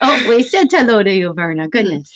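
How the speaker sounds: ordinary delivery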